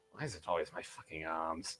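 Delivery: whispering under breath. Voicing a character looking at his ruined arms: whispering under his breath. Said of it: "you guys just all hear him whisper under his breath".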